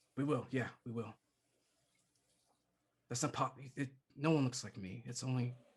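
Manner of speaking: whispered in a character voice. Speaking in character privately to Doc after a calming touch: whispering. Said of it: "I would be whispering that to Doc".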